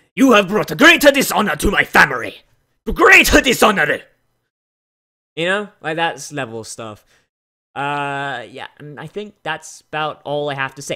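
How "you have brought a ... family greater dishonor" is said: very loud, high, bellowing anime villain voice. Describing generic anime villain voices, giving an example: generic anime bad guy voice. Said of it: "generic anime bad guy voices, like".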